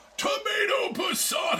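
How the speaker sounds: silly announcer voice, high, loud shout.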